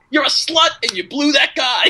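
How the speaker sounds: very high, shrill yelled shout. Retelling a movie scene where a man shouts at his wife: imitating someone shouting. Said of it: "he's, like, shouting at her".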